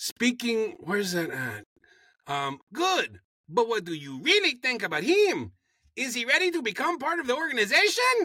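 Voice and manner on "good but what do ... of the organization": fake Latin accent with raised pitch. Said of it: "this is my Latin accent".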